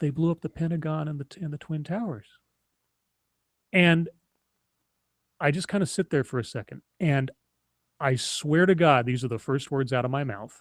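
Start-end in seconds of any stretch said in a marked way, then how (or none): 0.0-2.3 put-on far-away, empty, lifeless voice. Retelling what the mother said on entering the room: imitating a distant, lifeless voice. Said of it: "distant, lifeless voice".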